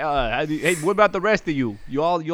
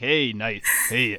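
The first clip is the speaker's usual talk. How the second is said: put-on Brooklyn accent, lower, quieter, slower; 6 semitones lower, 3 dB quieter than usual. Storyteller voices Balthazar looking at the listener's shirt, Balthazar in Brooklyn accent. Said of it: "I'm trapped in Brooklyn voice".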